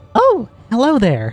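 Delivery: high-pitched ghost voice. Voicing a ghost greeting the players, attempting Nikki's voice. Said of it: "I can't do your voice, Nikki".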